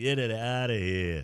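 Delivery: put-on New Jersey accent. Telling listeners to check their work-site dumpster's logo, in a New Jersey accent. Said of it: "That's my uh, New Jersey accent".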